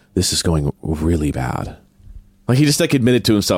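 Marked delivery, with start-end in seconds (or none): 0.2-1.8 put-on mutter under breath, much lower, slower. Retelling what a man muttered to himself walking away from a camera crew, imitating muttering under breath. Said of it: "said to himself under his breath".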